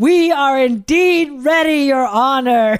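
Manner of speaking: loud, high, yelled preacher voice. Retelling a lawyer answering the judge's question, Percy Foreman's yelling preacher voice. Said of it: "he gets up in his preacher voice and he yells".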